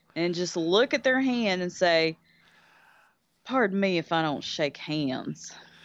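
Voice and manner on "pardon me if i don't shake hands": put-on Southern accent. Showing how to refuse a handshake: Doc Holliday Southern accent. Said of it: "slip into your best Southern accent".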